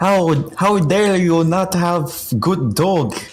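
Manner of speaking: put-on very high-pitched, strange Russian accent. Retelling Miss Tanner confronting a dog owner: weird Russian accent. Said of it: "trying to do like a weird like Russian accent".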